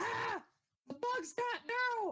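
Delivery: very high-pitched, shrill, alarmed scream. Player voices a character getting off the ground as a companion is grabbed, screaming. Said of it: "he's going to scream".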